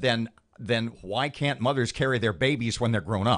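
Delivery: normal talking voice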